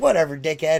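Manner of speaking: ordinary talk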